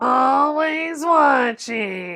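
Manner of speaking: loud cartoon monster voice. Asked all week to do the voice, the speaker performs it: Roz voice. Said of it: "making the voice of Roz".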